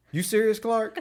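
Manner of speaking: dead serious, a touch high. Retelling a favorite movie line from Eddie: dead-serious Eddie voice. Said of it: "as serious as he can be".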